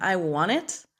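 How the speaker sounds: normal talking voice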